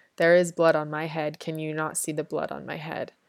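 ordinary delivery

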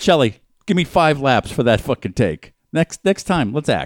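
put-on high school football coach voice. Mimicking someone scolding shelley over a take: like a high school football coach. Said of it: "He's like a fucking high school football coach".

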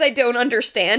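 ordinary talk

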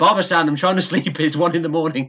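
mock loud shout. Retelling what was shouted up to a noisy upstairs trainee: imitating someone shouting. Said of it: "just shouting".

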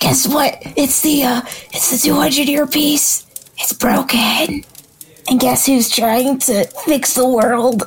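put-on whispered delivery. Retelling a role play where a character leans in to share news, retelling a whisper. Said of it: "I'm gonna whisper this to you".

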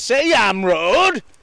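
loud, put-on, menacing, intimidating tone. Retelling what the cab driver said back: imitating an intimidating driver. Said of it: "in a very intimidating way".

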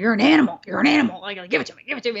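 put-on wrestling promoter voice. Retelling what Vince McMahon said to A J: Vince McMahon impression. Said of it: "the Vince McMahon that we all do".

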